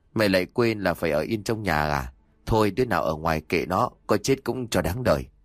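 ordinary delivery

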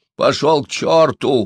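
loud yelled outburst, shouting. Narrator reads an old man answering a young man in a pit, shouting. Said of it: "крикнул старик".

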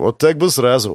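plain reading voice

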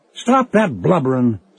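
firm, commanding tone. Sven orders the begging, frightened narrator, commanding. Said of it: "Sven ordered me".

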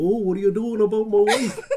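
put-on Canadian accent laid on super thick, loud, high. Quoting a woman's husband confronting a man sniffing around his wife, thick Canadian accent. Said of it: "lays it on super thick".

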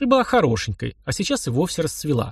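ordinary talk

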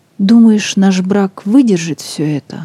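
plain reading voice

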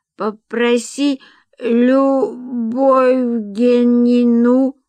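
faint, weak, hoarse, fading voice, one word drawn out. A caller rings back and asks for her, weak, hoarse, dying. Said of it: "Слабо, хрипло, умирая".

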